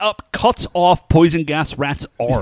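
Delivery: ordinary talk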